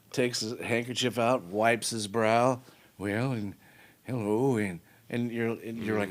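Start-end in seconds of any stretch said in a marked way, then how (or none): 3.0-4.8 charming, born-showman delivery. Imitating Reagan wiping his brow at his ranch: Reagan impression. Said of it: "Reagan, you know, like".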